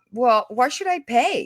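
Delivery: normal talking voice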